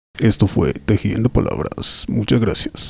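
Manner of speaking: put-on radio announcer voice. First time on radio, signing off the show: radio announcer voice. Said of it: "quería utilizar mi voz de radio".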